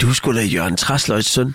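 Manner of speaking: plain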